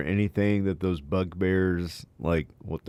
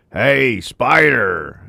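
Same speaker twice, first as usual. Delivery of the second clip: very loud, raspy, rough bugbear monster yell; 5 semitones higher, 12 dB louder than usual. Player calling out to get someone to come over, yelling in a bugbear voice. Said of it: "So in a bugbear voice".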